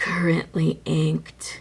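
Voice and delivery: creepy, eerie put-on voice. While writing, saying the words aloud in a creepy voice. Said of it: "Wasn't that a creepy voice?".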